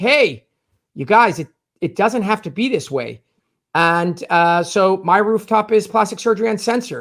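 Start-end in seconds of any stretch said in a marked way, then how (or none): none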